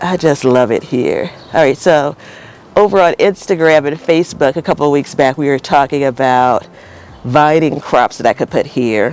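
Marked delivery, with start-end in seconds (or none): 0.0-1.3 smiling voice, slower. Speaker talking to her Instagram and Facebook audience, smiling voice. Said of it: "Can you hear the smile in my voice?".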